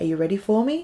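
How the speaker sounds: hushed, intimate, close half-whisper. Retelling what someone said in the dark: imitating a half-whisper. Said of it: "he whispered into my ear".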